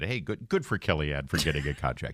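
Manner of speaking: imitated sarcastic tone. Retelling own earlier remark about a contract: imitating own sarcastic tone. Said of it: "the sarcasm in my voice when I said".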